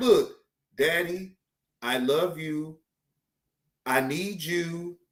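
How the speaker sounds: slow, contrite, humbled pleading tone. Imagining a humbled daughter telling her daddy she needs him: imitating a humbled daughter. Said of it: "she better humble herself the fuck down".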